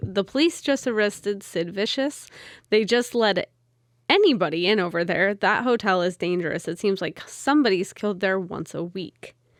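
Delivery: ordinary talk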